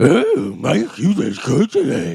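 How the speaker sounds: drawn-out, high, swooping cartoon dog voice. Asked to, speaker congratulates the other on a victory, cartoon dog voice. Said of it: "in the voice of a cartoon dog".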